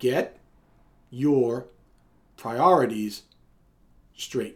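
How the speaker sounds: slowed, deliberate, word-by-word emphasized delivery. Repeating a four-word command a second time for the listener, slowed down. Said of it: "Let me slow it down".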